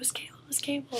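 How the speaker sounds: high, whispered voice.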